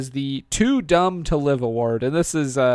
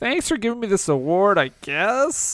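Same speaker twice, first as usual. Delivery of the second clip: high, whiny complaining tone; 5 semitones higher than usual. Accepting an award in a comedy bit: whiny Peter Parker voice. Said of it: "I'm not crying, I'm whining".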